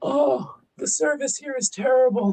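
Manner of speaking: put-on elderly man's voice. Speaking for the pet, who talks like an old man: Mochi's old-man voice. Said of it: "Mochi talks like an old man".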